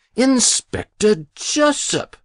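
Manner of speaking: sharp, cutting, very high-pitched delivery. Muriel cuts into a man's whispered warning; sharp interruption. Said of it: "Muriel interrupted sharply".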